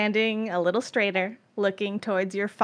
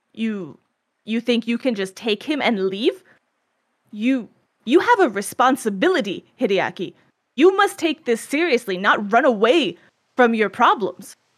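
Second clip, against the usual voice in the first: loud, disbelieving, reproachful voice; 7 dB louder than usual. Storyteller speaks as Hideaki's father, facing Hideaki and the dragon, incredulous father. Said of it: "like incredulous".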